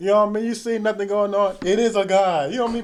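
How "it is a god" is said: jeering, sarcastic, mocking tone. Acting out Elijah mocking those who cry to Baal: Elijah's sarcastic mockery. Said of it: "Being sarcastic".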